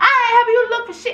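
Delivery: put-on, very high, shrill yell. Speaker reenacting shouting out the window at the man searching for his grill, retelling a yell. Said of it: "and I'm yelling".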